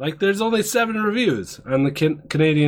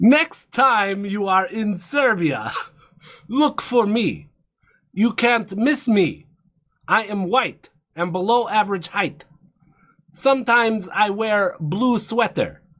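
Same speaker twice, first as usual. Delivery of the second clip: higher-pitched fake Russian accent; 5 semitones higher than usual. Voicing a Serbian character: mock Russian accent. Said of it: "I would give it my best Russian".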